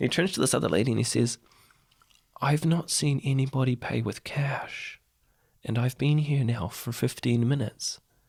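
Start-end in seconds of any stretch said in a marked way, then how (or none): 2.4-8.0 put-on, almost American accent, much slower. Telling a story about a man in a Burger King queue, the speaker does his almost American accent. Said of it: "he's got that almost American accent".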